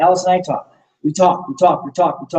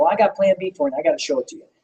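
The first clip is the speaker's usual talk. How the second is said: acted-out urgent, pressing delivery; 3 dB quieter than usual. Retelling what he told a woman on the stairs, retelling an urgent pitch. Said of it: "See how I said it? It was like a sense of urgency".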